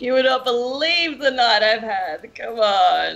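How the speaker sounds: convincingly acted drunk speech. Retelling the speaker's past self trying to pass as drunk, acting drunk convincingly. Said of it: "I try and act drunk convincingly".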